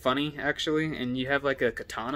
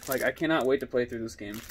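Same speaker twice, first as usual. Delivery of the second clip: normal talking voice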